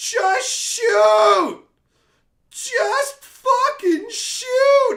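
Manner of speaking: very high, very loud, slow, drawn-out bellow. Describing getting mad while watching a show, retelling yelling at the screen. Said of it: "literally yelling at the screen".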